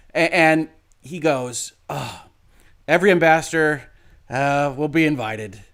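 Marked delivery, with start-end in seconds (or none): 1.9-5.5 put-on defeated tone. Imitating him announcing the sweepstakes: imitating a defeated tone. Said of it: "you sound defeated".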